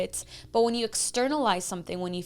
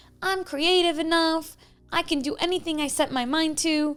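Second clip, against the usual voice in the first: put-on high, raised, pouting, defiant child voice; 7 semitones higher, 5 dB louder than usual. Speaker voices their inner child speaking up to an adult: put-on pouting child voice. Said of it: "kind of like a determined child pouting and speaking up".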